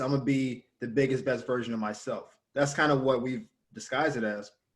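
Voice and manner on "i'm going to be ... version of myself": plain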